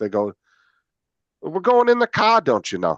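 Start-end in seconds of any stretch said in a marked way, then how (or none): 1.4-3.0 put-on Minnesota accent, pitched up. Describing how people from Minnesota or Wisconsin talk, in a put-on Minnesota accent. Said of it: "that they have that one accent".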